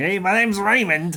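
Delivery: slow, high, put-on New Jersey accent. Saying Raymond is not like this, the speaker does a put-on New Jersey accent. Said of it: "he's not like a New Jersey. Like".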